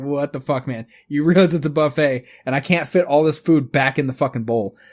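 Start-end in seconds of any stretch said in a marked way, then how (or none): none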